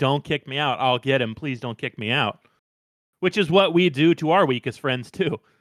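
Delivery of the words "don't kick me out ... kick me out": put-on begging, pleading voice. Retelling how a character begs the group to keep him. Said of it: "he starts begging and pleading".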